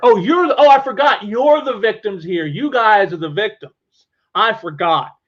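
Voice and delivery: acted patronizing, condescending, dismissive tone. Imitating the one who brushes off criticism: imitating Dan Shaheen condescendingly. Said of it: "condescendingly just brushes that all aside".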